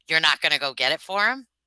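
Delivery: loud, yelled voice. Retelling how a customer's father answered: imitating someone yelling. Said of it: "he yells at me".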